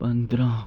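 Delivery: very soft, hushed, barely-there murmur. Demonstrating how numbers are called out: very soft voice. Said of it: "एक धीमी धीमी आवाज़ में number बोलने हैं".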